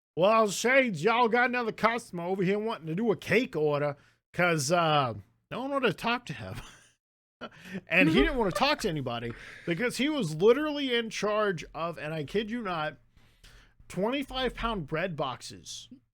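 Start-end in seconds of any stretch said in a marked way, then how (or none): 0.2-4.0 put-on strong, thick, rural backcountry Georgia accent. Recalling working at the bakery with Tony, imitating Tony's rural Georgia accent. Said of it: "this kind of accent, ... from the rural parts of Georgia".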